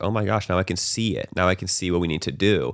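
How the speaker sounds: plain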